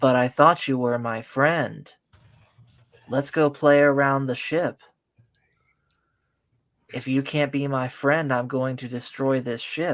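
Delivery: mock flat monotone delivery. Mocking how a child delivered her lines: imitating a monotone delivery. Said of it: "she could not have been more monotone".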